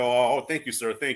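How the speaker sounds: put-on proper voice, polite, respectful, deferential. Acting out being stopped by police: put-on proper voice. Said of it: "use my proper voice".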